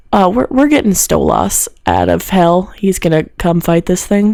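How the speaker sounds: voice dropped right down. Retelling what a woman announced, repeating her words with a lowered voice. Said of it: "and she lowers her voice for this".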